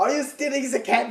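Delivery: mock shrill, very high-pitched accusing, scolding yell. Retelling an older lady shouting at them, imitating her yelling. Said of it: "She's just yelling at us".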